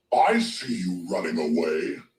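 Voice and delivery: dragon creature voice. Voicing a dragon in a game: dragon voice. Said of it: "I like that voice for the dragon's cool".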